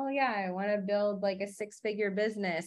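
dull, deadpan monotone with no enthusiasm. Imitating someone stating a business goal, imitating someone with no excitement. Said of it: "you say it like that with no excitement".

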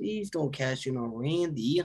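mock-sincere tone. Retelling someone begging Mr. Money in the Bank not to cash in, mock sincere plea. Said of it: "so sincere".

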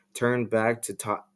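ordinary delivery

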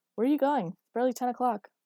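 calling out loudly. Chris calls after him as he heads for the elevator, calling after someone. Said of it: "Chris called after him".

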